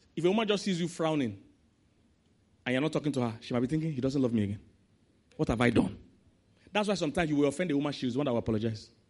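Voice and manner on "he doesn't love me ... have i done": ordinary delivery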